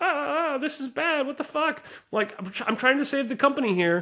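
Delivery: mock, very high, tearful sobbing wail. Retelling the entrepreneur's phone call, imitating someone crying. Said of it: "literally crying".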